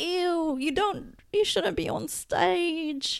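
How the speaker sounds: put-on British accent, high, slow and drawn out. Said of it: "Why am I going British now?".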